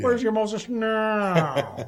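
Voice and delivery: loud, slow, "now" drawn out. Telling a story, speaker delivers a line as an Edgar G. Robinson impression. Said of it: "impression of Edgar G. Robinson".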